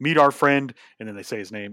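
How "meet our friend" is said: loud wrestling announcer voice building in intensity. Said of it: "is just like".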